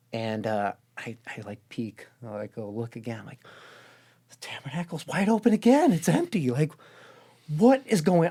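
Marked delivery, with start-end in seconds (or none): 4.2-8.3 acted, high, alarmed, freaked-out panicked disbelief. Retelling own words after peeking again: imitating own panic. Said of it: "I'm freaking out now".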